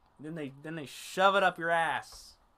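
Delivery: ordinary delivery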